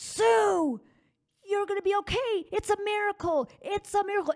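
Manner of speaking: high, loud, excited scream.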